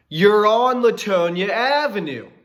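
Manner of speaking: mock very slow, drawn-out, high-pitched holler. Retelling yelling to a driver from eight feet away: imitating yelling.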